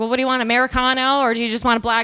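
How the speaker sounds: mock loud yelling, shouted out. Retelling a woman shouting at a man, imitating someone shouting. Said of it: "like shouting".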